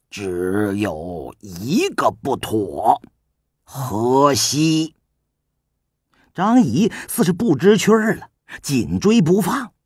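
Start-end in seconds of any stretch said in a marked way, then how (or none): 0.1-4.9 slow, spaced delivery, one word at a time. Narrating a story, a king answering a man's question, word by word. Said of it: "一字一顿道".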